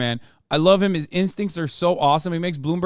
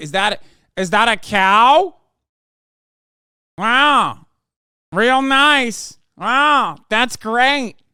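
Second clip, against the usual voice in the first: very slow, raised, dragged-out words, cow stretched long; 6 semitones higher, 6 dB louder than usual. Retelling another video clip, mocking its speaker: imitating Ron DeSantis. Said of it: "There was another video where he's like".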